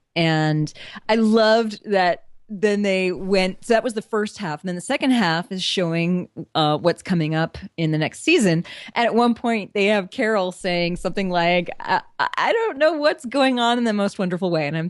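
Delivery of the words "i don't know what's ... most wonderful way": ordinary talk, nothing marked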